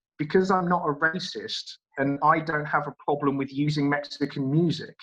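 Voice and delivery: ordinary delivery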